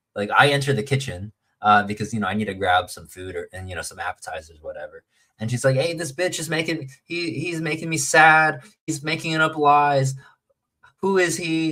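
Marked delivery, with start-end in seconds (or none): 5.8-11.7 put-on drunk woman's yell, high and drawn-out. Retelling a woman who yelled at him in the kitchen, imitating a woman yelling. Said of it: "And then she starts yelling at me".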